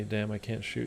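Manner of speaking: dejected voice. Reacting after getting hit in the game, sounding sad.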